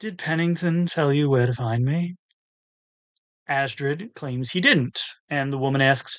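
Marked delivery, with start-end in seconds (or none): 0.0-2.1 dreamy, drifting, faraway dreamlike voice. A narrator reads a woman's question to the visitors, in a dreamy voice. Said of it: "asks in her dreamy voice".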